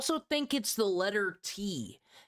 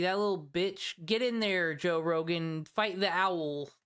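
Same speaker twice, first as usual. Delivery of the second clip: ordinary talk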